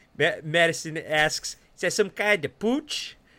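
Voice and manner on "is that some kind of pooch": put-on Chicago accent, higher. Reading a detective story aloud, stressing the A, in an imitated Chicago accent. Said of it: "It's pretty good".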